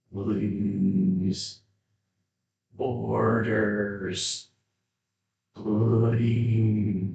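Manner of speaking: metallic, mechanical, flat monotone robot voice. Voicing a fallen machine begging: robotic metallic voice. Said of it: "this kind of robotic, metallic voice".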